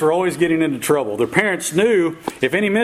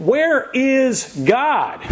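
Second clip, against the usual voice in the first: severe, sterner, higher-pitched voice; 7 semitones higher than usual. A preacher repeats his question to a silent boy, in an even sterner tone. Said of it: "in an even sterner tone".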